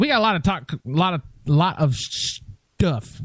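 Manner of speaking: stuttering, tripping over the words. Listing what the show will talk about tonight: stuttering. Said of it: "I'm stuttering".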